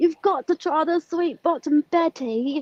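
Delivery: put-on English accent, high-pitched, throughout. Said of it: "he had an English accent".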